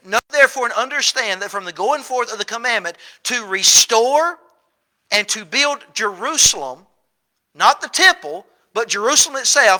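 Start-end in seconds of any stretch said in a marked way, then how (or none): none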